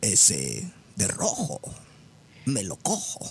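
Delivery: sultry, low and slow drawling voice. Asked on the show for a sultry phrase, give it in a sultry María Félix voice. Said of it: "danos una frase cachonda con voz de María Félix".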